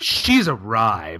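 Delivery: confident, self-assured, fully convinced delivery. Retelling a line from a movie scene: confident Eric Roberts impression. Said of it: "he says it with such confidence".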